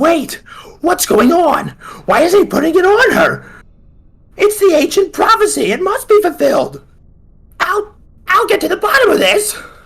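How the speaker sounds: very high, frantic, shrieking creature voice. Game master voices a one-eyed triangle creature appearing before the bride and groom, screaming.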